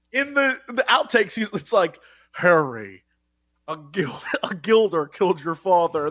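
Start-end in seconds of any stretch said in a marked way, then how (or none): 2.3-6.1 put-on elderly butler voice, fumbling and tripping over words. Retelling the butler's outtakes: imitating an old butler flubbing lines. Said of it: "he's, like, a very old man".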